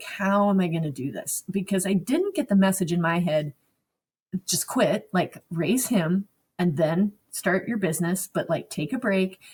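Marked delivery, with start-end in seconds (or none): 0.0-1.4 put-on sobbing while speaking. Recalling kneeling on the floor after getting her toddler a snack, retelling her own sobbing. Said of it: "knelt on the floor and just sobbed, like".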